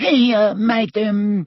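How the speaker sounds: very high-pitched, tiny, squeaky little voice. A house elf answers madam's call, squeaky Hokey voice. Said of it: "squeaked the house elf".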